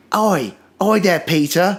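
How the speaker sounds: hammy fake British accent. Acting out a street busker calling to Peter: horrible British accent. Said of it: "just a horrible British accent that's not working".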